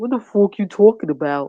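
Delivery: botched put-on New York accent. Retelling how a man tried to mock someone with an accent: fake New York accent. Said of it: "Like he from New York".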